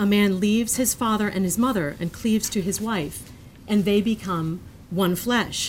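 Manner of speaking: plain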